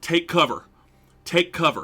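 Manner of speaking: high-pitched, alarmed scream. Narrating a scene where riders wave travelers off the path, screaming. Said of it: "you can hear them screaming".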